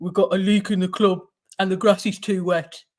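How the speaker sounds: mumbling put-on voice. Asked to do the impression, you show how it goes with your head down, mumbling Ange Postecoglou impression. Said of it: "you have to mumble, mumble, mumble".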